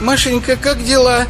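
speaking in a thin voice. Reading a story aloud, a visitor addresses Mashenka; thin voice. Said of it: "тонким голосом спросил он".

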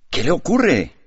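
alarmed, concerned, high, surprised exclamation. In a story, a man sees a visitor come in with a bloodied face, exclaiming. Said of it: "exclamó".

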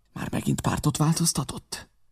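irritated, angry whisper. Angered by the constant turncoating, the narrator whispers back. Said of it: "visszasúgtam".

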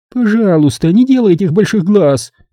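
sly, snarky, snide, very high-pitched tone. Nina speaks to another woman she calls dear, snide. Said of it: "ехидно проговорила Нина".

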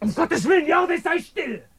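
shouting. In a drama, during an argument about lying and secrets: shouting. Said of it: "Warum schreist du so?".

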